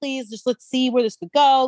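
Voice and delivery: mock pleading, put-on begging voice. Retelling how a man begged two women to stay, imitating someone begging. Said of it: "Begs like to Rachel".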